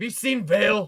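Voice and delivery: very loud, high-pitched yell. Game master voices Celia knocking hard at a player's door, yelling. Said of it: "He yells again".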